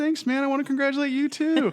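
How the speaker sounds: put-on very high, loud little kid voice.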